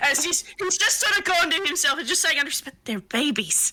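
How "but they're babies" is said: quiet mutter, slower. Speaker voicing a character muttering to himself, quiet little mutter. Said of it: "He's just this quiet little mutter".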